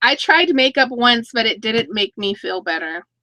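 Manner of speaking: ordinary talk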